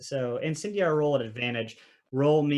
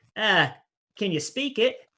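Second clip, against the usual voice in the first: high goblin voice, in character; 7 semitones higher, 4 dB louder than usual. Narrating to a player as the goblin speaks to them, in a goblin voice. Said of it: "the goblin looks at you and says".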